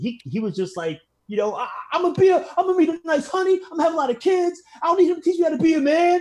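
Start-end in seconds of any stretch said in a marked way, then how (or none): 1.5-6.2 put-on distraught voice, higher and louder. Retelling a TV episode where the son is rejected by his father: imitating Will losing it. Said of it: "he was losing it, man".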